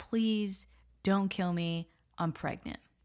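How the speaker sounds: imitated feeble tone. Retelling what a victim says to her killer: imitating a weak plea. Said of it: "she weakly says".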